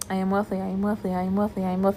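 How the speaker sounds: mechanical, feelingless, robotic monotone, soft and flat. Speaker demonstrates how they repeat a daily affirmation, as a robotic affirmation. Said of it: "That's how I robotically affirm".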